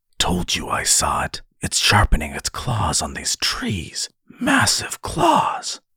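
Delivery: sharp, hissing voice. One companion answers the other's whispered guess about a noise, hissing. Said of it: "Ven hissed".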